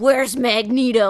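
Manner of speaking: slow, loud growly voice in teeth and throat. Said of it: "all kind of in the teeth and in the back of her throat".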